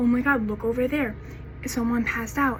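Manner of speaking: ordinary talk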